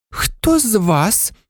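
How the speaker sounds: trembling, shaky, quavering voice. Narrator reads a professor confronting stunned students: trembling voice. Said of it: "почала вона тремтячим голосом".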